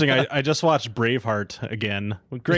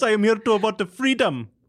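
very high, loud, bad Jamaican accent. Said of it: "I made him sound Jamaican".

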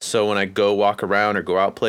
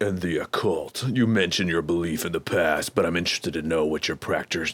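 sinister, evil put-on villain voice; 3 semitones lower, 4 dB quieter than usual. Reading out a listener's question, in an evil voice. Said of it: "I messed up my fucking evil voice".

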